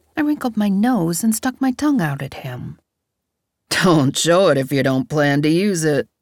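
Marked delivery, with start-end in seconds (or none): 3.7-6.0 laughing while speaking, slower pace. Walking into the apartment, he responds to her stuck-out tongue, said with a laugh. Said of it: "Darren said with a laugh".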